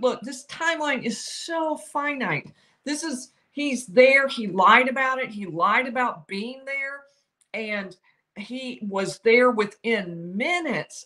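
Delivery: plain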